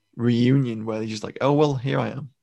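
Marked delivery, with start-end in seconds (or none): 1.4-2.3 put-on glib, unfussed, stiff-upper-lip, curt, matter-of-fact tone. Discussing a reunion scene, acting out a character's line: imitating a curt matter-of-fact tone. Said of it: "very matter of fact, very sort of like curt".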